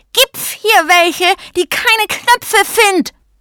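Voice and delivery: piercing, very high, shrieking screech. A uniform button confronts those in the room; shrieking. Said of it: "kreischte der Uniformknopf".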